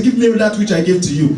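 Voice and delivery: ordinary talk, nothing marked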